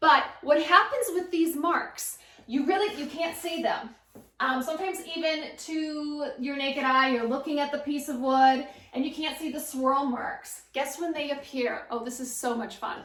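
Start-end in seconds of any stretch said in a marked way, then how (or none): 11.9-13.0 sarcastic tone, quieter. Explaining when hidden sanding swirl marks show up: sarcastic. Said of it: "I'm being truly sarcastic here".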